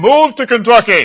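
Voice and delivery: big, loud, booming delivery. Acting out a voice parting the heavens to give an order, in a booming voice. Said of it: "in a booming voice say".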